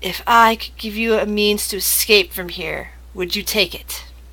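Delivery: hushed, gentle, soft-spoken voice. Game master voicing a character speaking to the players, in a soft voice. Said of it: "says in a, in a soft voice".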